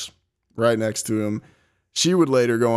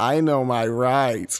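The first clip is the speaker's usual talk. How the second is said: put-on, slow, nerdy Southern drawl. Voicing a character, trying to make him sound nerdy and southern: nerdy southern voice. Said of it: "trying to make him sound nerdy, but also, I don't know, like southern".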